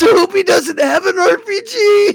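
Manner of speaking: very high, laughing too hard to talk. Retelling what one guy said while laughing, imitating someone laughing hard. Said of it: "he's laughing so hard".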